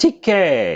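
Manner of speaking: voice cracks mid-letter, drawn-out k sound. Calling out a name as someone arrives, voice cracking. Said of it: "my voice cracked".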